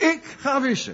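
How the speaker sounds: heavy stress on the word ik. Unpacking a quoted line by putting stress on ik. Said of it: "Ik zou de nadruk en de klemtoon op ik willen leggen".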